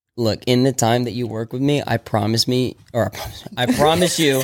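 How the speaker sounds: ordinary delivery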